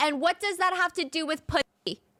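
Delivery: play-acted, high, sudden, abrupt yelled scream. Retelling how a bored dinner guest interrupted everyone: imitating Jeffrey Epstein screaming. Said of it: "he would just interrupt everybody and scream".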